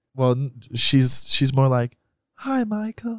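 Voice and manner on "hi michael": put-on British accent, much higher, quieter. Showing another speaker how his British mom really sounds, imitating his mom's British accent. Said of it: "Is that what your mom sounds like".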